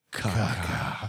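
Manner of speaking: slow, very dramatic delivery. Retelling a movie character's last line before a bug attack: slowed-down, very dramatic. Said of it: "slows it down and very dramatically goes".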